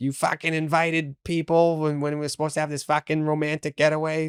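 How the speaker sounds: put-on voice, fed up and complaining.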